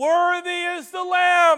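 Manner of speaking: loud, high, grand proclaiming voice. Voicing the crowd in heaven for listeners to picture, in a loud voice. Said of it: "A loud voice".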